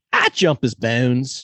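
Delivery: put-on, drawn-out Baltimore accent. Repeating a phrase he leaves on someone's voicemail, in a Baltimore accent. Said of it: "That is a Baltimore accent".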